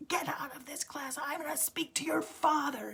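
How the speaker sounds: high, acted-out, top-of-the-lungs scream. Recalling being an anxious child frozen in class, imitating a teacher screaming. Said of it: "he is screaming at the top of his lungs".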